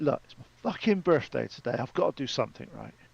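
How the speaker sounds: muttered under the breath. Retelling what he said to himself on his birthday, muttering under his breath. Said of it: "and I under my breath".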